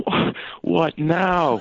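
high, slow, drawn-out, weary and exasperated.

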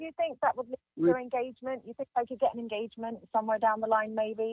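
hurried rattled-off delivery. Asking a follow-up question, talking fast. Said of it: "You're talking fast".

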